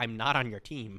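plain

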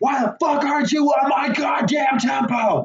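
play-acted very slow, very high drawn-out yell. Retelling a movie scene where a guy yells at a drummer: imitating someone yelling. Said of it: "he starts yelling".

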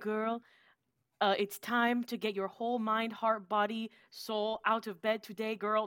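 fuzzy, non-specific put-on European accent. Teasing another speaker by imitating people on TikTok: vague European accent. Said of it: "They do like this like vague European accent".

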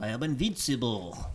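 put-on heavy, thick, laid-on Russian accent. Talking with friends about 90s movies, quoting a line in a thick Russian accent. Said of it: "This thick ass Russian accent".

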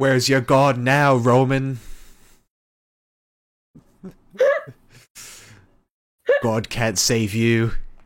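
very loud, bellowing wrestling-persona voice. Imagining a wrestler interrupting a match to taunt a rival, in Finn Balor voice. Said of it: "Why is he talking like that?".

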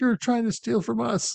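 very high, angry, shrieking scream. Recounting a friend's account of screaming at a man; retelling a scream. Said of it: "you were just screaming at him like".

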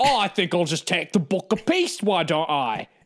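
put-on terrible Cockney accent. Imagining a character in the movie speaking: Russell Brand voice, Cockney accent. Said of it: "Russell Brand comes in and he's like".

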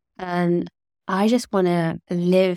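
ordinary talk

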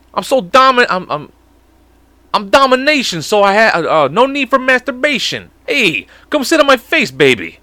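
put-on Italian guy voice. Speaker recalling lines they came out with, in an italian dude voice. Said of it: "I went straight to this Italian dude's voice".

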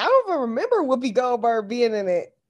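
plain

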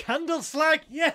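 gleeful cheer.

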